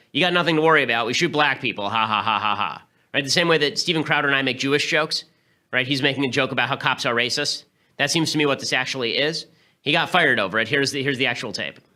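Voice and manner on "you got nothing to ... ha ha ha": acted sarcastic tone, pitched lower. Acting out what an officer said to a drunk woman in his car, retelling a sarcastic joke. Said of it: "he says this stupid thing sarcastically".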